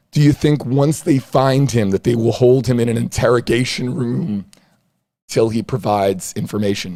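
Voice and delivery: very loud, hoarse voice, cracking. Streamer reading a viewer's question from the comments, voice cracking. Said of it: "My voice is, is cracking there".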